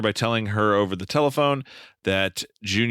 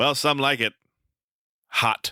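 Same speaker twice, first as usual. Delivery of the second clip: slow delivery with long, dramatic pause before "hot"; 4 semitones higher than usual. Imagining how an actor would deliver a line: Nathan Lane-style pause before hot. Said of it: "he would have to pause before hot".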